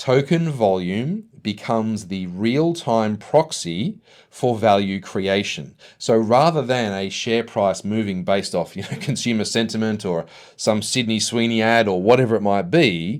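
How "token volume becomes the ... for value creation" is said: slow, deliberate, each word laid down. Repeating the previous sentence a second time, speaking slowly. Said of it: "I'll say that again slowly".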